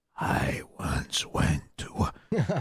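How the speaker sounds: very slow, faint, whispered murmur. Imitating how quietly Joey talks compared to Joe Rogan: imitating Joey whispering. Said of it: "Why are you whispering to me like this?".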